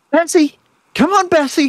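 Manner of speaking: put-on very high, loud little boy calling out. Describing the sounds of a scene, imitating a little boy calling out. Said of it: "You hear the little boy going".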